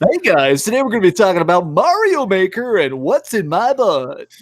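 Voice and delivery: manic video game announcer voice. Recalling how commenters described his old voice: crackhead video game announcer voice. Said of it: "Dreamcast guy's voice is like a crackhead video game announcer".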